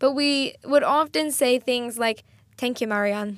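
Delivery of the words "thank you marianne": clumsy, badly butchered Irish accent. Retelling a catchphrase from an irish show: bad irish accent. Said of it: "I'm gonna butcher the accent".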